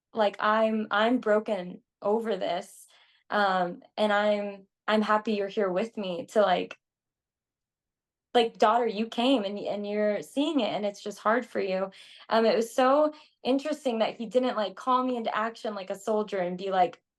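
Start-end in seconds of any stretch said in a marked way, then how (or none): none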